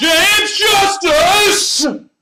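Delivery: shrill, very high, very loud full-throated yell. Announcing who sent the next question, yelling a name. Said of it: "I finally get to yell".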